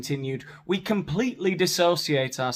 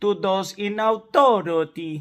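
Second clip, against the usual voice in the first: put-on Italian accent, higher and louder; 6 semitones higher, 6 dB louder than usual. Reading aloud a boat company spokesperson's statement: put-on Italian accent. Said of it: "I've caused any offense with my accent".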